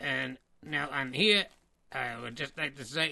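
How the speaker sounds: puppet voice spoken with closed, unmoving lips. Greeting fans in the chat room: King of the World puppet voice. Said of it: "a little friend of mine".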